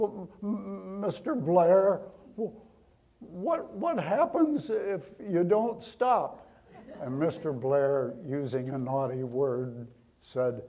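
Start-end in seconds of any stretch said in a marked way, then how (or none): 0.0-6.5 high-pitched, scared, frightened stuttering stammer. Retelling a scared coworker's question to the boss: imitating a stammering voice. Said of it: "in a stammering voice".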